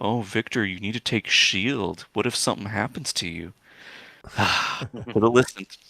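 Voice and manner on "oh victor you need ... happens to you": grumbled aside, muttered under breath. Narrating a character who grumbles at Victor as the party leaves: grumbling under his breath. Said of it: "you can hear him grumbling under his breath".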